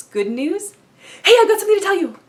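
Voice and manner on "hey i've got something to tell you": very high, very loud, fast, excited, eager burst. Showing how people sound when sharing good news, excited, fast, no pauses. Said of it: "There's this excitement, our words tend to flow a lot faster".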